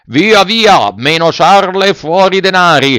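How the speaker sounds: slow, menacing, threatening shout. Two bandits demand money from the puppet, shouted threateningly. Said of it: "Gridavano minacciosamente i due briganti".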